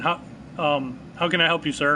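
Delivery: ordinary talk, nothing marked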